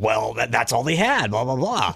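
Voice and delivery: irritated, displeased, growling voice. Retelling what the wife said about the pork: growling voice imitating wife. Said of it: "all of a sudden your wife has a growling voice".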